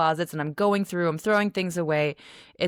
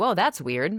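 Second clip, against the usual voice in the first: ordinary delivery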